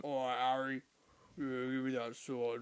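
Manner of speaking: put-on soft Cockney gangster accent. Describing an actor's line in the last film, the speaker does a cockney gangster voice. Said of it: "he's like a Cockney gangster".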